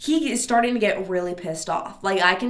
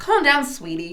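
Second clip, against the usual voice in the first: deliberately mean, biting, dismissive mock tone; 4 semitones higher than usual. Retelling telling a man to calm down: imitating a mean tone. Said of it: "I am trying to be so mean right now".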